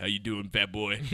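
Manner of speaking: big, deep, booming voice. Acting out a baby greeting someone in a made-up story: big deep voice. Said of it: "the baby has a big deep voice".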